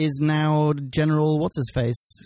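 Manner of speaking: ordinary delivery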